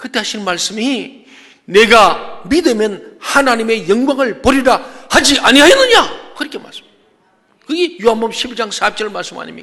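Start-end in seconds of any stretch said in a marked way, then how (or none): 1.7-6.3 high, loud, slow, furious voice. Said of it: "너무 격분하셔서".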